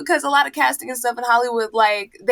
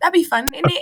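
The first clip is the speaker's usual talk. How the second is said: put-on british London accent, higher pitch; 5 semitones higher than usual. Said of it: "I did this".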